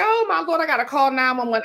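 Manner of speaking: acted-out, yelling, screaming cry. Recounting hauling a ladder to reach her cat, retelling her own screaming. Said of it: "I'm screaming".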